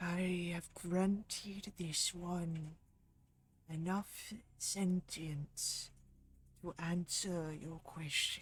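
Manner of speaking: eerie, hushed ghostly whisper, close in the ear. Narrating to a player, a voice whispers in their ear, ghostly whisper. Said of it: "a voice whispers in your ear".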